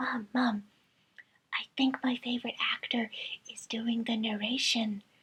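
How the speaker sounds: whispered voice. Retelling a moment of speaking to mom: imitating own whisper. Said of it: "I whisper to my mom".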